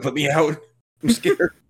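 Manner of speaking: put-on scared, frightened, begging tone. Voicing a character on screen who wants out: voicing Peter, mock scared plea. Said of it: "being like".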